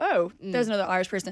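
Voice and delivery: ordinary talk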